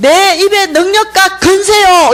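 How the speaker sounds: high, loud, slow, fervent cry. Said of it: "입은 다르게 외치고 있는 거예요".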